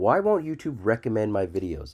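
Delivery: ordinary delivery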